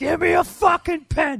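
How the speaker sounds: put-on loud drunk yell, very high-pitched and drawn out. Reading a letter about a drunk guy asking friends loudly: imitating a loud drunk. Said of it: "said loudly".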